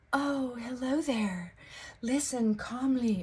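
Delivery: mock, put-on, overly soothing calming voice. Mocking sleep videos whose voice tries too hard: imitating an overly soothing voice. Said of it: "intending to sound soothing or intending to sound calming".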